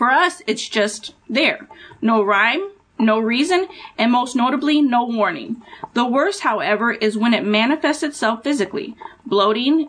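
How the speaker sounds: ordinary talk, nothing marked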